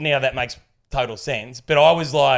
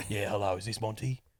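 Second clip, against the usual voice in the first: very hushed, quiet murmur under the breath; 5 semitones lower, 14 dB quieter than usual. Retelling a scam call from a London caller: Jason Statham impression. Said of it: "might as well have been Jason Statham".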